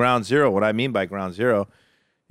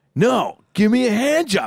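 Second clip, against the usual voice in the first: acted-out, very high, angry, indignant insistence; 13 semitones higher, 4 dB louder than usual. Retelling his own demand to the masseuse: imitating his own angry demand. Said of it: "And I started getting all mad".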